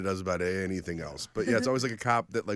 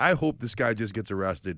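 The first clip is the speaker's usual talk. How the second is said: plain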